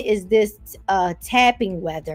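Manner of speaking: plain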